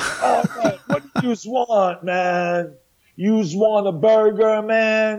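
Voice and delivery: bad put-on Brooklyn accent, very drawn out, slow, high. Describing the waiters at a disaster-themed restaurant, in fake brooklyn accent. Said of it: "the waiters spoke in fake Brooklyn accents".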